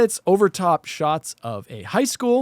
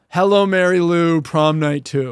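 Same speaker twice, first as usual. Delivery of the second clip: slow delivery in a distinct cadence; 4 semitones lower, 3 dB louder than usual. Saying a movie title the way the other speaker says it: imitating the other speaker's way of saying it. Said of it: "I just said it like you would say it".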